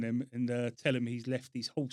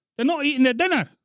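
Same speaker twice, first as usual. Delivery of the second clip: put-on Scottish accent, very high, shrill, very loud; 14 semitones higher, 13 dB louder than usual. Prank calling an air force base: put-on scottish accent. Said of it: "You putting on a Scottish accent?".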